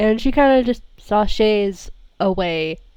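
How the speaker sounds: ordinary talk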